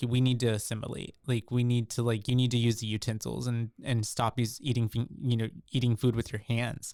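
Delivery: ordinary delivery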